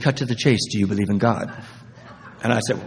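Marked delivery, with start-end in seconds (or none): 0.0-1.5 beautiful British accent, put-on and laid on. Retelling what a woman on the bus said: imitating a british accent. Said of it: "this beautiful British accent".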